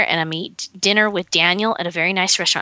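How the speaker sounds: ordinary delivery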